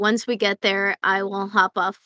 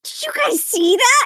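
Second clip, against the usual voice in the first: put-on childlike wonder, much higher and slower; 10 dB louder than usual. A wide-eyed character turns to companions in amazement, asking if they saw something. Childlike wonder. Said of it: "like a kid in a candy store".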